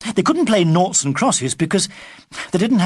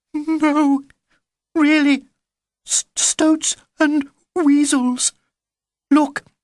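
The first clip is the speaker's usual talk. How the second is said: small squeaky voice, high-pitched and slow; 9 semitones higher than usual. A narrator reads Nick's line to Baby Bee: squeaking. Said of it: "Nick squeaked".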